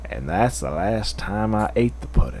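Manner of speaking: low, deep, soft celebrity voice. Others ask the speaker for Morgan Freeman; speaker does a Morgan Freeman voice. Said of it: "Morgan Freeman's more like".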